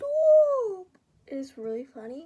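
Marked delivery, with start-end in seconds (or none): 0.0-0.9 very high, very loud, stretched-out yell. Retelling how a classmate reacts when the desk is pulled: imitating a classmate shouting stop. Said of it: "And then he keeps saying".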